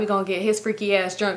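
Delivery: ordinary talk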